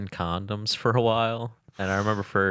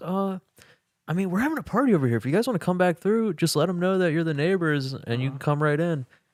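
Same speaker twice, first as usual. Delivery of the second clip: mocking smooth-talking business voice, higher; 9 semitones higher, 3 dB louder than usual. Retelling how a neighbor came out to smooth talk them: imitating a smooth-talking business guy. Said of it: "came out to, like, smooth talk us".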